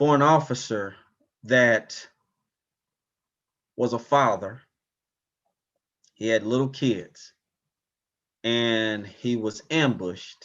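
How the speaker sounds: choked-up voice catching in the throat. Recalling negotiating with the man who killed an officer: choked up. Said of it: "I still get choked up".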